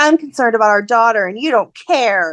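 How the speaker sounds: put-on angry, accusing, reproachful tone. Retelling a character's complaint to Curtis: imitating someone getting mad. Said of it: "she gets all mad at Curtis".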